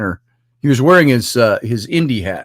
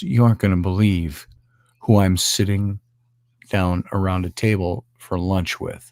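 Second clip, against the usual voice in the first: soft, half-whispered; 5 semitones lower, 5 dB quieter than usual. Retelling a friend's phone call from a lunch table: imitating someone half-whispering. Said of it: "he's kinda whispering".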